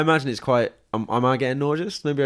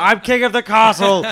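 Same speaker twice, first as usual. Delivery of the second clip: high, full-throated scream at full force; 9 semitones higher, 6 dB louder than usual. Character in a rotating tower room: screaming at the top of voice. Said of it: "start screaming at the top of my voice".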